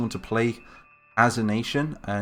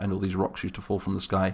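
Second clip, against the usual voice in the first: usual speaking voice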